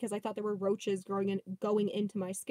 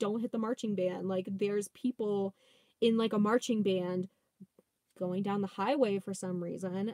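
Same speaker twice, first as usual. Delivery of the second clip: usual speaking voice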